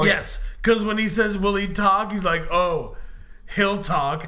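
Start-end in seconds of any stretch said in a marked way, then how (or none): 2.5-4.3 mock-menacing, much slower. Retelling a film character's reply about a tied-up captive: acting out menace. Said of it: "really menacingly".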